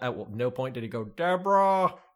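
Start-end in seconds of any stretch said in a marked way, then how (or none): 1.0-1.9 high, rough-sounding call. Retelling a comedy show, doing a bad Ray Romano impression. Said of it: "how bad that impression is".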